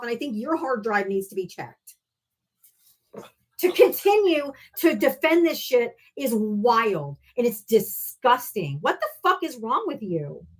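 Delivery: angry, wild, drawn-out furious rant. Arguing with another speaker who defends a politician: angry. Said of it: "You're making me more and more pissed off".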